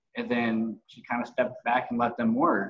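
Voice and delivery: ordinary talk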